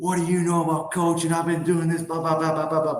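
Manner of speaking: put-on angry screaming. Retelling how the coach reacted to criticism: imitating someone screaming. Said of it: "screaming at me".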